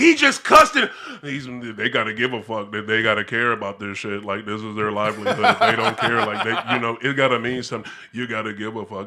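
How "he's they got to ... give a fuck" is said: low, flat monotone, level and never raised. Imitating Todd Bowles cussing at a press conference: cussing in monotone. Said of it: "have the same monolithic tone the whole time".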